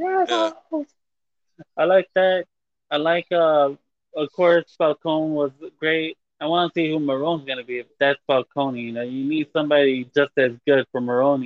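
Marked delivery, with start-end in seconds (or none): 0.0-0.9 very high scream. Repeating the tied-up Penguin's line: imitating Penguin screaming. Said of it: "And he screams it out too".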